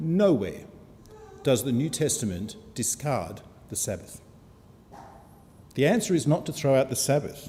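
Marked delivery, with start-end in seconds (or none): 0.0-4.2 very slow, low, deliberate, each word spaced out. Making a point to listeners, saying it really slowly so they get it. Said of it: "I say this really slowly".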